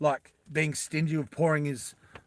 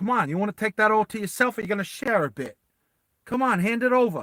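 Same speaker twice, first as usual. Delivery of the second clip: put-on, pitched-up New Yorker accent; 6 semitones higher, 4 dB louder than usual. Retelling a scene, the speaker voices a New Yorker talking to a Russian guy: New York accent. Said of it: "he's a New Yorker, so he's like".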